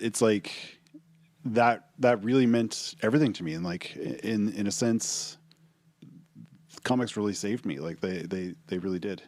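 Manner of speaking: choked-up, emotional voice catching. Talking about what comics meant to them, choked up. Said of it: "I'm kind of getting choked up".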